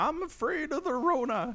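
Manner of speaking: put-on elderly old man voice, pitched very high. Imagining an old person phoning in, say it in an old man voice. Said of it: "you can do an old man voice very pretty well".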